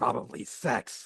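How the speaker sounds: slow, creepy lean-in delivery. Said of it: "He just, like, leans in creepily".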